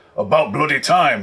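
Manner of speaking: loud growling voice. Game master voices a figure on the communicator screen, in a growling voice. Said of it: "a voice growls".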